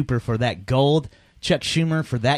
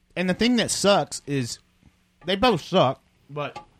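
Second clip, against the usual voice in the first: talking while eating, mouth full, higher pitch; 4 semitones higher than usual. Commenting on the impeachment vote while eating, talking with a full mouth. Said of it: "Sorry, I'm eating".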